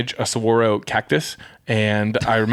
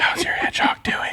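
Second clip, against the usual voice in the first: put-on hushed whisper. Retelling playground talk with a friend about a hedgehog: imitating a hushed whisper. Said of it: "in such hushed whisper".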